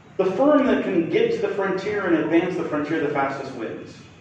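ordinary talk

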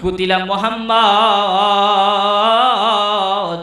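long, drawn-out, called-out announcement style.

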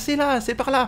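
high-pitched voice calling out.

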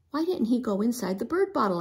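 ordinary delivery

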